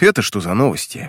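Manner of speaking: ordinary delivery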